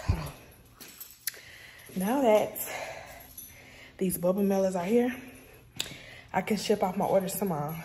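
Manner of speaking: out of breath. Picking up mailers for orders, pausing mid-talk: out of breath. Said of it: "I'm out of breath".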